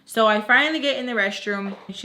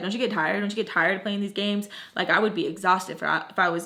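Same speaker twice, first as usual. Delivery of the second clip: normal talking voice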